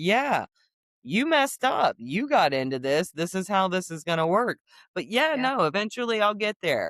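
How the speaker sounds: mock unbothered, casual, offhand nonchalant tone. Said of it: "he's over there nonchalant".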